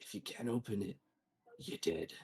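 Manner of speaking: soft, secretive, hushed stage whisper. Standing behind the group trying to open it, he warns them: half-whispering. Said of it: "he's gonna whisper".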